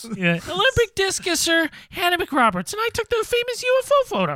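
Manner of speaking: very high-pitched character voice swooping up and down. In a comedy scene, introducing the character as an Olympic champion, higher-pitched Hannah McRoberts voice. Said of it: "talking in a higher pitched voice".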